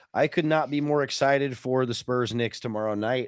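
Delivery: ordinary talk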